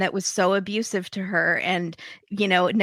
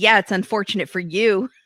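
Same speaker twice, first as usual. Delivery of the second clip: put-on tough street talk in a woman's voice. Retelling a woman's comeback in an argument: imitating Renee talking like a thug. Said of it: "she starts talking like a thug".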